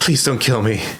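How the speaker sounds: scared, frightened pleading voice. Voicing a cornered man scampering against a wall: frightened pleading. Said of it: "scampers up ag-, against the wall".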